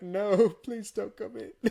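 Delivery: mock tearful voice, slow, on the verge of tears. Acting out a worker pleading with a wanted man at a counter: mock crying while pleading. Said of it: "you sit there almost, like, crying".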